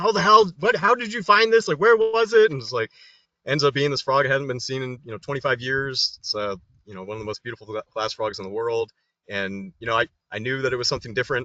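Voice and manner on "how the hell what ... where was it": very high, loud hollering, all at once. Retelling how everyone reacted to the found frog: imitating people yelling. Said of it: "everyone just starts yelling".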